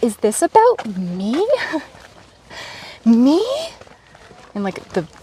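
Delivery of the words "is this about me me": exaggerated, very slow, strong valley girl drawl. Speaker recalls wondering if something was about them; strongest valley girl voice. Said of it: "the strongest Valley Girl voice I can muster".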